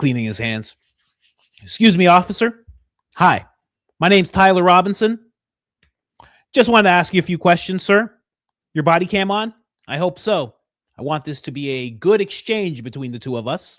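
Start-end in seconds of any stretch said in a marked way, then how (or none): 1.6-13.8 very high, loud, supremely confident voice. Imitating someone speaking to an officer: mock very confident Tyler Robinson. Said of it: "Just very confident".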